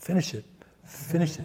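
soft, breathy, repeated whisper. Quoting a film's repeated message to listeners: whispering. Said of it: "It's like a whisper".

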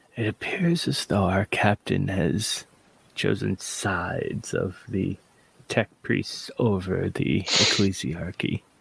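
whispered aside. As Kynok, leaning over to Jarnan, whispering. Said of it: "whisper to him".

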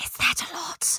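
hushed, in-character whisper. Voicing a character leaning in to ask a friend: in-character whisper. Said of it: "she whispers".

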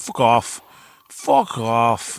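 put-on broad, thick Australian accent, laid on big, swooping. Retelling a man's reply to men urging him to join their church: big australian accent. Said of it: "big, big Australian accent".

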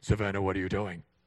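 low, loud, stern fatherly scolding voice. Showing the voice used when getting mad at her, bad dad voice. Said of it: "if I use any semblance of my bat dad voice".

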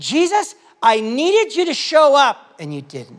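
play-acted, exasperated, frustrated and accusing. Explaining a bible passage, acting out a frustrated plea to jesus, imitating frustration. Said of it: "She's frustrated that".

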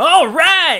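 very high, shrill, very loud holler. Retelling how a friend yelled at a midnight screening: imitating a friend yelling. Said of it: "he would just yell in this theater".

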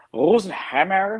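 put-on Irish German accent. Saying a surname after being asked to: attempted Irish German accent. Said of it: "in your best Irish German accent".

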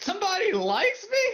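voice breaking into a very high squeak. Acting out a line after being told to put in more effort: imitating a voice crack. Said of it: "you gotta put more effort into it".

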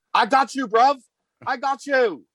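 fake British accent drifting into Australian, very high. Retelling a game winner, quoting a line in a bad british accent. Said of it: "That was almost Australian".

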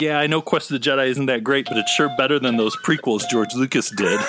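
plain

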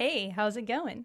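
put-on easygoing, casual podcast host voice. Greeting the host while doing an impression of him: Joey impression. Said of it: "I'm trying to do my best impression of you".

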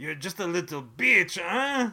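vague, unplaceable put-on European accent. Describing how one character looks down on another, the speaker does the Igor voice. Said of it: "I'm not sure why Igor sounds like that".

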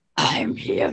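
throaty rough voice. Trying the character's line again after asking how to sound guttural: guttural voice. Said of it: "how do I do guttural? Go like".

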